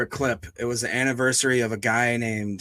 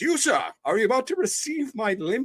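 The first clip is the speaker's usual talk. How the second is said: put-on elderly man's voice, higher pitch; 10 semitones higher than usual. Retelling an arrest video, imitating the arrested old man: imitating an old man's voice. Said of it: "he talks like this".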